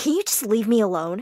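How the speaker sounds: usual speaking voice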